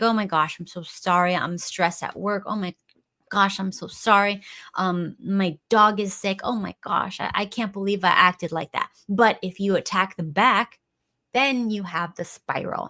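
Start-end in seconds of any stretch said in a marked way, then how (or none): 0.0-8.9 words forced out through hysterical sobbing and crying. Describing how a partner reacts when asked if they're okay, imitating hysterical crying. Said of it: "start like hysterically crying and be like".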